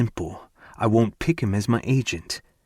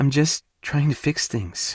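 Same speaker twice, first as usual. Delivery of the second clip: earnest, beseeching, pleading tone, pitched up; 5 semitones higher than usual. Reading a character's line in a novel, asking to be heard: soft plea. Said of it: "she says in a soft plea".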